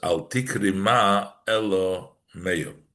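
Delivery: slow, deliberate pronunciation meyo, not ma.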